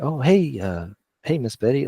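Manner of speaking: tiny harmless voice. Showing how he talks on the phone to seem harmless: sounding really small. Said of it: "like I just sound really small".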